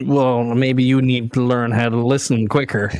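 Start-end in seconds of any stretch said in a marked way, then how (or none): none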